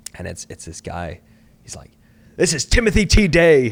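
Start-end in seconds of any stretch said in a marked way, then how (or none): 2.3-3.7 aggressive, pushy, very loud and very high voice. Retelling a phone call from an unknown caller: imitating Timothy T. Day, aggressive. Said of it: "all aggressive and stuff".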